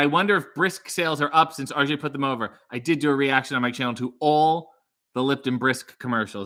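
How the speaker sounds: ordinary talk, nothing marked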